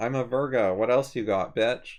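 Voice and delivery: ordinary talk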